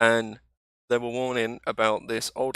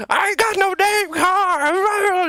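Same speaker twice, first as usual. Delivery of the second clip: put-on very high, very slow, drawn-out screaming old lady voice; 5 dB louder than usual. Retelling how an old lady screamed at an interviewer: imitating an old lady screaming. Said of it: "she's just started screaming at him, like".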